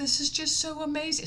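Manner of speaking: put-on whisper. Retelling what the cashier said at the register: imitating the cashier whispering. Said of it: "So we're whispering".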